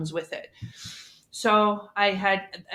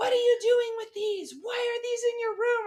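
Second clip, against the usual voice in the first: mock shrieked, high, screaming outburst. Retelling how mom reacted on finding the books: imitating mom screaming. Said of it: "She screamed at me".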